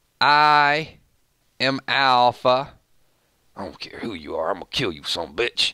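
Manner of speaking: eerie, sinister creepy voice, "I" drawn out. Imagining a conversation with Daryl at the fence: creepy Alpha voice. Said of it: "the creepy Alpha voice".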